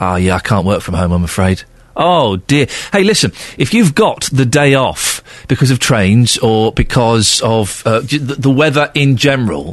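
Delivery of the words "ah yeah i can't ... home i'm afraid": mock-disappointed tone, faster pace. A radio host replaying a caller's reply, mimicking Ross's disappointment. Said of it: "Did you hear the disappointment in Ross's voice?".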